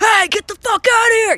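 very high, loud, put-on tough-guy yell. Retelling chasing a thief from the yard: imitating a big tough guy. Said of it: "pretend to be this, like, big old tough guy and be like".

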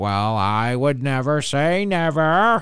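very slow, deliberate hedging, every word drawn out. Imitating a politician saying she would never rule out running: impression of Hillary Clinton. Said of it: "That's a good impression".

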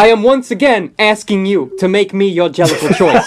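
pleading politician voice. Speaker talking about a film suddenly slips into a Bernie voice. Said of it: "I started doing a Bernie voice".

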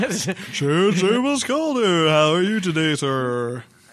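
high, loud, slow, showy, over-the-top enthusiasm. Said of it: "You sound so unenthused on that".

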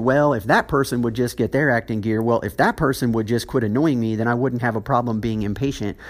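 plain

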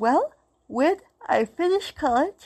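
loud, high words spoken through a yawn. Speaker relaying someone's marriage plans, yawning while talking. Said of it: "I'm sorry, I'm yawning".

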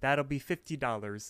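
normal talking voice

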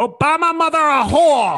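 forceful, very loud, shrill, slow belted delivery. Quoting Duterte from the Philippines, saying it very strongly. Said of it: "He said that very strongly".

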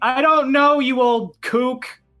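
yelling loudly. Voicing someone answering from the captain's cabin: shouting from the cabin. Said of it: "you hear a shout from in the captain's cabin".

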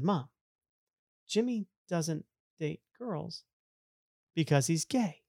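acted, quiet, matter-of-fact, totally dead serious. Retelling answering their mother's question at dinner with a friend over, retelling a deadpan line. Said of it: "deliver that with such a straight face".

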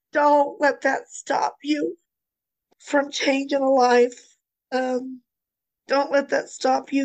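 crying, tearful voice. Talking about the day the ashes were ready, crying. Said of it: "and while I'm crying".

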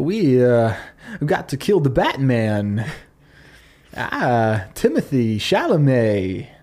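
put-on halting actor voice. Trying again after saying the impression could be better: Christopher Walken impression. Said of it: "I can do a better Walken".

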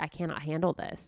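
normal talking voice

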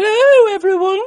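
put-on wild lady voice, very high and loud. Suggesting a voice to try for the recording: crazy lady voice. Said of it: "Do you want to go crazy lady voice?".

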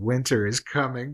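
plain

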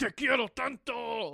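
harsh scolding tone. Showing how a dog reacts to tone: speaking harshly. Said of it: "le hablo mal y les digo".

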